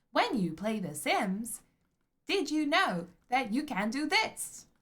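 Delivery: high, loud text-to-speech computer voice. Planning a new TikTok account, the speaker demos a possible intro: TikTok computer voice. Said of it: "in that computer voice".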